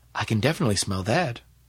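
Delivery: ordinary delivery, nothing marked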